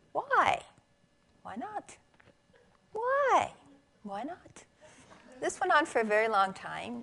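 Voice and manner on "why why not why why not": tiny parrot voice, very high, slow, drawn out. Retelling what they heard from under the bed, imitating Amigo's little voice. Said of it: "We would hear this little voice saying".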